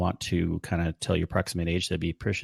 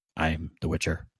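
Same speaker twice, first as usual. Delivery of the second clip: put-on brooding hero voice. Saying a game hero talks like Batman, doing a brooding Geralt of Rivia voice. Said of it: "the way he talks, doesn't it remind you of like Batman?".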